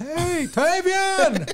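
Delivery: screaming, yelled out high.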